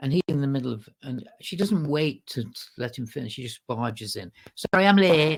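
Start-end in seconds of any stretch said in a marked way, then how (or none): 4.5-5.4 put-on thick Manchester accent, raised voice. Retelling a latecomer barging in mid-speech, thick manchester accent. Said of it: "thick Manchester accent".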